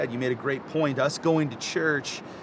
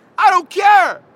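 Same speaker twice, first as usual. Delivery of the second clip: high, slow, loud, crazy-in-love yell. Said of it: "I'm gonna be out here yelling like".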